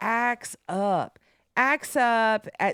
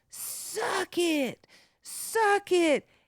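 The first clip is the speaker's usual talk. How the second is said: put-on very high, very slow, drawn-out drunken scream; 10 semitones higher than usual. Retelling how a drunk woman at a gig screamed: imitating a drunk woman screaming. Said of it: "she just starts screaming at me".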